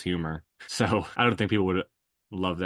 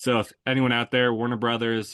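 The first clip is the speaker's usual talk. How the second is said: ordinary talk, nothing marked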